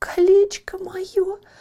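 in a whisper. A girl, getting her lost ring back from a prince, whispers. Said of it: "прошептала девушка".

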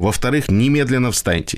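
ordinary delivery, nothing marked

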